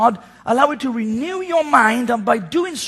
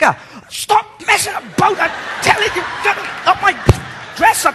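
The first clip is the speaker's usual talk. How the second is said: sudden, harsh, angry scolding snap; 7 semitones higher than usual. Retelling how the worshipper turned on her kids: imitating someone snapping angrily. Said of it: "something out of an Arnold Schwarzenegger movie".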